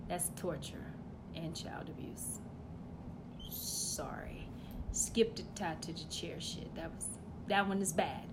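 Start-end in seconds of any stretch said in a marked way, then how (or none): 0.1-2.4 soft, hushed voice.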